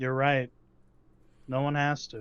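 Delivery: cold, dead, icy menacing tone. Answering a gunman's plea with a cold, dead look: cold, dead menace. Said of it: "he just sees a cold, cold, dead look".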